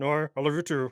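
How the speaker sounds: indistinct muttering. Acting out taking a girl's call in the kitchen with mom nearby, mumbling. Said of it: "You're kind of mumbling".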